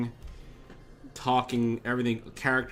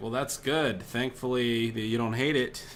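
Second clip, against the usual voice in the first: normal talking voice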